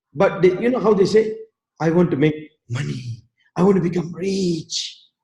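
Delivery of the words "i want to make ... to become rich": very soft, hushed, barely-there voice. Quoting how people talk about money, in a very soft voice. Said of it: "Very softly".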